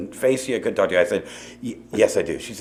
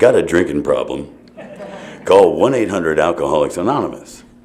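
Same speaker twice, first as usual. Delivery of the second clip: low movie trailer announcer voice; 5 semitones lower than usual. Reading a sticker in a phone booth, in the movie voice guy voice. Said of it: "it always has the movie voice guy".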